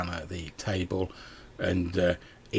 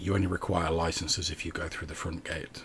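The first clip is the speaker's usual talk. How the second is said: low, quiet, hushed murmur; 7 dB quieter than usual. Playing a woman in a scene, the speaker answers in a low, quiet voice. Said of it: "in a very sort of low, like quiet voice".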